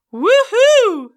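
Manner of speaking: shrill, very high, very loud head-voice cheer. Vocal exercise, cheering like an audience, saying woohoo in head voice. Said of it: "We're going to say woohoo up in our head voice like this".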